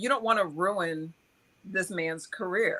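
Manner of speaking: normal talking voice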